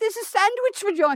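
put-on snooty British woman voice. Retelling what a british woman on a show said: imitating an uppity british woman. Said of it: "but she says it like".

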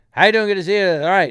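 very loud rapid-fire comic chatter. Describing the guy who went on before, imitating really loud, fast talking. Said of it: "they're talking really loud and really fast".

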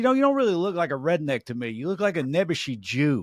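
somewhat exaggerated, swooping New Jersey accent. Retelling what a fan in New Jersey said after a show: imitating a New Jersey fan's accent. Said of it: "I'm exaggerating a little bit, but it's pretty much how he talked".

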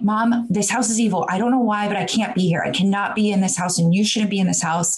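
put-on panicked freaking out. Recounting what they told their mom, reenacting freaking out. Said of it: "I just start freaking out".

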